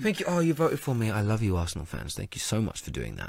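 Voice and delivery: low, swooping, sing-song voice. Imagining the player thanking fans who voted for him: imitating Lacazette thanking fans. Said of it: "He won't say it like that either. He's French".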